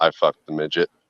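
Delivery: whispered voice. Retelling what a guy on the boat said: imitating a whisper. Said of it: "he just whispered it to me".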